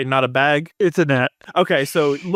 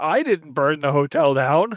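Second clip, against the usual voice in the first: usual speaking voice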